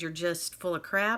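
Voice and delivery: ordinary talk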